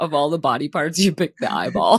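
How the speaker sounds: words broken up by laughing. Teasing the other speaker about their word choice, laughing while talking. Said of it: "I'm laughing because you".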